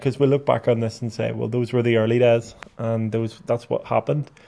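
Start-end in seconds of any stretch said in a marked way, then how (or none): none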